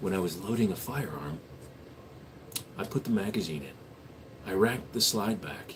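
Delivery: soft, hushed ASMR whisper. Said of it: "A S M R for one whole minute".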